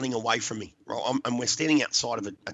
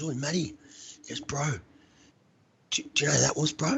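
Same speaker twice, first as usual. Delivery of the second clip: mock hesitant, halting speech; 3 semitones higher than usual. Retelling how one of the guys approached the speaker, retelling hesitant speech. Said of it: "sort of real hesitantly".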